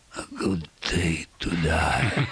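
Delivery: low whispered line. Recounting a man in a lift who looked at him, retelling a whisper. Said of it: "he whispers something".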